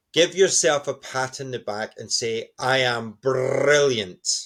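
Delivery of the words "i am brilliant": Scottish accent with trilled r in brilliant. Showing a morning self-talk ritual, Scottish accent with rolled R. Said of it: "in your best Scottish accent".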